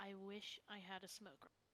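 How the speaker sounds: very quiet, low, barely audible mumble. A character staring past everyone, snapping a bracelet: mumbling. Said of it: "and just mumbling".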